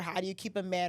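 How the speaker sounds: plain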